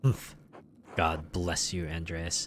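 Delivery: dripping condescension. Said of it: "most condescension just dripping out of his mouth".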